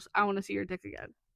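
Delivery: mock, put-on deadpan delivery. Retelling how she answered a flirting guy, retelling a deadpan line. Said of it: "Riley deadpan goes".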